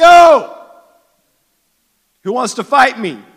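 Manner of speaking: very loud, high, shrill giant yelling. Retelling how the giant came down each morning yelling at the Israelites: retelling a giant's yell. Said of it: "he just yells".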